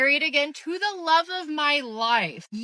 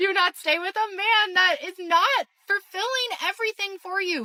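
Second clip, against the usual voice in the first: restrained, soft-pedalled, mild yell; 5 semitones higher than usual. Talking to y'all about getting divorced, yelling. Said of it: "I'm yelling".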